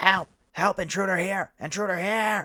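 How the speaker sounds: very high, shrill, frantic goblin screech. Voicing a dangling goblin who calls for help: goblin screaming for help.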